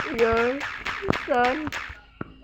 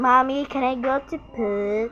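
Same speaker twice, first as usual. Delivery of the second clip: put-on voice sounding like a small child. In a skit, the speaker plays a child calling to mommy, in a little kid voice. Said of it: "Magpabata ko".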